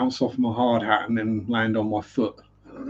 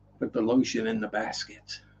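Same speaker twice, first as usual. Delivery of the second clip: poor, put-on American accent attempt; 5 dB quieter than usual. Quoting the lotion line: attempted American accent. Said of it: "the American accent I'm rubbish at".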